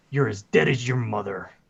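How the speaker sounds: dark, very menacing, threatening tone. Voicing a man staggering back to his feet, speaking to Amiko in a very menacing voice. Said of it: "He says this in a very menacing voice to Amiko".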